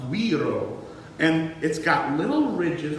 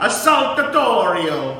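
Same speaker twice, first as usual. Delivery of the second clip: put-on Italian accent in kitchen-chef style; 3 semitones higher, 8 dB louder than usual. Saying a new word the way an italian chef would, italian chef accent. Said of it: "say it like we're an Italian chef".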